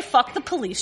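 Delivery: normal talking voice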